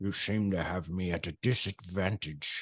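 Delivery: put-on deep statesman voice, British. Repeating the quote as Churchill might say it: deep Churchill voice. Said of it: "I can hear the deep".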